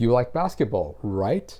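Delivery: rising pitch lift on the word right. Explaining how a statement becomes a question: rising pitch on right. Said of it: "I'm using that upward inflection, so it's a question".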